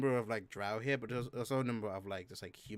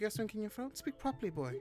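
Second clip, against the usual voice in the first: very high, chiding motherly voice; 11 semitones higher than usual. Voicing a player character's mother who surprises her son: mother's tone. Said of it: "your mother's tone".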